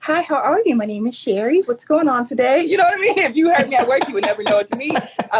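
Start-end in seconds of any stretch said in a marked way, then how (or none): 0.0-2.6 polished, toned-down professional voice. Explaining she learned to code switch at work, the speaker demonstrates: code-switched work voice. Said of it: "learned how to code switch".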